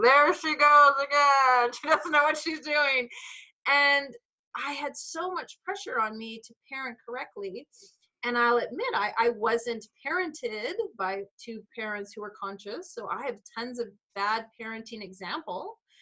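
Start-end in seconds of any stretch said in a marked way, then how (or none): 0.0-3.1 loud, booming, judgmental voice. Acting out the imagined judging voice about parenting mistakes: booming judging voice. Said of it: "this big spotlight and this booming voice".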